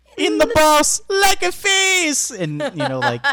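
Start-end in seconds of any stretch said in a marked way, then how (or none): 0.2-2.3 put-on Irish accent, higher and louder. Quoting a line one might say to Jacksepticeye: Jacksepticeye impression. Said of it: "In your best Irish".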